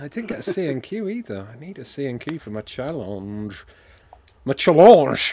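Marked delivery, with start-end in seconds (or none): 4.4-5.3 mock French accent, louder. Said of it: "That's French for challenge".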